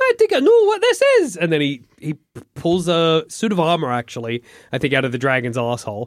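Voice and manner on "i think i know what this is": put-on loud, very high-pitched Scottish accent. Retelling a movie scene where the hero faces a dragon: Doctor Dolittle Scottish accent. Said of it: "'cause he's got a Scottish accent".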